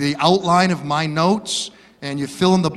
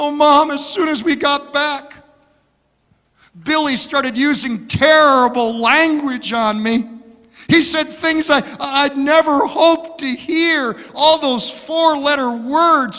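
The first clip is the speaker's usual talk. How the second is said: put-on sobbing speech, higher pitch; 9 semitones higher than usual. Telling a joke about a bride calling her mother: imitating a crying bride. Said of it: "she starts sobbing, start crying".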